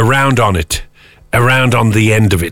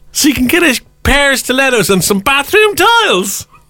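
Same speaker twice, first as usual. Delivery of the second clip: put-on high, shouted Manchester accent, woman's voice. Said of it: "Why are you shouting me like a ... woman from Manchester".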